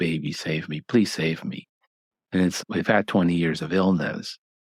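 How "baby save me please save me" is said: mock crying with a tearful, pleading tone. Retelling a patient having a heart attack at night: imitating someone crying. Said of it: "they're crying like".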